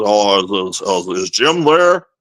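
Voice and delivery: put-on very slow, drawn-out old-timer voice, every word dragged. Retelling a man's prank phone call, doing his Charlie voice. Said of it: "And he does his Charlie".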